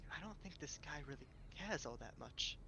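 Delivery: hushed, soft half-whisper. Speaking privately to Odra about this guy, half-whispering. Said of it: "I'm whispering to Odra".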